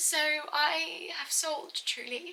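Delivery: crying through the words. Sharing news of a sale, the speaker is crying while talking. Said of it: "Oh my god, I didn't want to cry".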